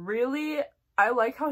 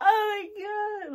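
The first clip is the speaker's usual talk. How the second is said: put-on very high, slow, sulky teenage whine. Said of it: "like, whining, like, Bella being like".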